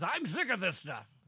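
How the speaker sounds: put-on loud, angry, grumpy, fed-up old man voice. Quoting Biden barking at House Democrats, imitating Biden's angry old man voice. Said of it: "He had his angry old man voice".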